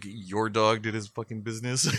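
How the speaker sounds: annoyed, grumbled mutter half to oneself. Retelling a reply to pops asking for a shovel: imitating muttering under breath. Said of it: "under my breath".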